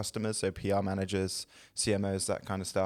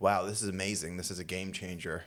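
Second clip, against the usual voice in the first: gushing, hyped, put-on American podcast accent. Mimicking an AI-generated podcast, in a put-on excited American accent. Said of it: "[name]'s attempt at an American accent".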